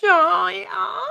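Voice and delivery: eerie, creepy, very high-pitched call. Performing a catchphrase when asked by the other speaker: creepy-sounding catchphrase call. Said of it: "that sounded creepy when I did it".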